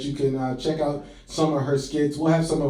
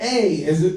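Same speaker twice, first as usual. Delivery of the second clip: patient preschool teacher voice, spelling out; 4 semitones higher, 4 dB louder than usual. Teasing another speaker about how she spelled her handle: imitating a preschool teacher. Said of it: "like a preschool teacher".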